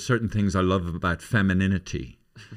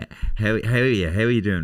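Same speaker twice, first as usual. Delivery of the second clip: put-on creepy tone. Retelling how a neighbour greets people, imitating a creepy neighbour's greeting. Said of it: "looks at you from underneath his eyebrows, like".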